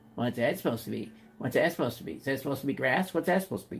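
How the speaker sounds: cranky, grumpy, nagging, carping grown-up voice. Painting and voicing the critical adult brain: imitating a grumpy inner critic. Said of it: "the grumpy adult brain could be saying".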